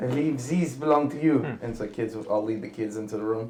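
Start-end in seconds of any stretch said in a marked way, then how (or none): 0.0-1.4 called out loudly. In a tabletop game, pushing through the doors: Vecna yelling out. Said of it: "Vecna's just gonna yell out".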